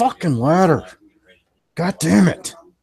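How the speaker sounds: through gritted teeth, very loud, high, frustrated. Voicing a frustrated character at a ladder: frustrated, through clenched teeth. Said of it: "through clenched teeth".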